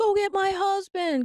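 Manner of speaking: tearful, high, drawn-out crying, pleading tone. Retelling how a woman begged the manager for her husband: imitating someone crying. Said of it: "crying and saying".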